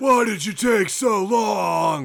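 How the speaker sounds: full-on unhinged, high frantic yell, long and drawn out. Continuing another speaker's retelling of the yelling scene: imitating Nicolas Cage freaking out. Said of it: "Nick Cage is going full Cage".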